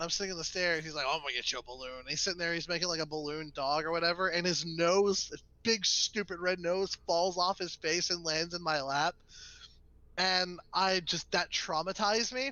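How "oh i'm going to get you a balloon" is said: put-on raspy voice, faster pace. Retelling what a man said while offering a balloon to the speaker as a kid, raspy voice. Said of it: "with like a really raspy voice".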